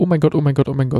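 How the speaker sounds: plain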